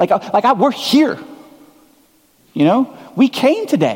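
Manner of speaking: high, exasperated, protesting voice. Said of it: "you might be thinking".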